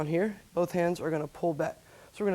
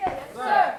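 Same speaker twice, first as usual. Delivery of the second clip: loud all-out yell at full volume. Instructor's students answer the attention command, yelling as loud as possible. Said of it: "yell, "Yes, sir," as loud as they can".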